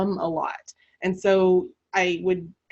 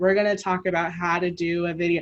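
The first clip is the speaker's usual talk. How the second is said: flat, level, unvaried monotone. Showing how talking in a monotone the entire time sounds, flat monotone. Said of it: "if I were to talk like this the entire time ... it's very monotone".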